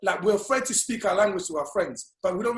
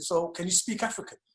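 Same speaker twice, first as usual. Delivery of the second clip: soft, put-on British accent; 5 dB quieter than usual. Recalling growing up in the UK, he imitates someone questioning him: British accent. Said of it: "with a British accent".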